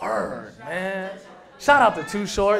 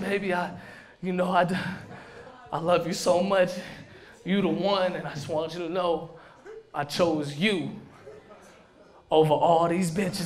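blubbering through fake tears; 2 semitones lower, 3 dB quieter than usual. Acting out future wedding vows: mock crying. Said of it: "I'm gonna be crying and shit".

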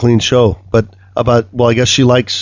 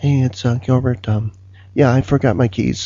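light, gentle, hushed put-on voice; 5 dB quieter than usual. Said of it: "his real voice is kind of like, ... It kind of sounds like [name]".

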